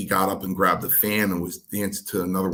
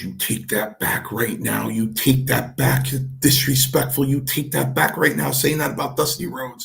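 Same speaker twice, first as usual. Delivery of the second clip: mock angry talk through gritted teeth, higher; 6 semitones higher, 3 dB louder than usual. Retelling how an angry Chief scolded him: imitating angry talk through gritted teeth. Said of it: "he would grind his teeth and talk to me".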